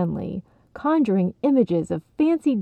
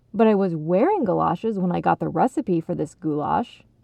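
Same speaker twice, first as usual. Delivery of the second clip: ordinary delivery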